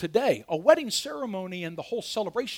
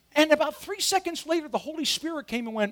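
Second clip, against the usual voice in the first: usual speaking voice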